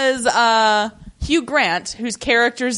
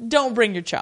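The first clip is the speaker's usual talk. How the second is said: pointed, put-on lord's voice; 3 dB quieter than usual. Retelling how Lord Risley snubs the friend: imitating Lord Risley, pointed. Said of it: "pointedly looks at his friend and is like".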